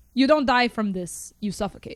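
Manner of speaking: put-on, scary Russian man's accent. Quoting a scary russian character from a film: imitating a russian accent. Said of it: "She's throwing out the accents again".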